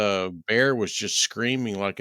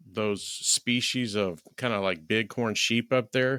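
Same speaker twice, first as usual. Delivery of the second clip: plain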